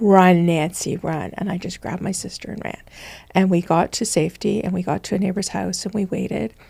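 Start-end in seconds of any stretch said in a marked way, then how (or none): none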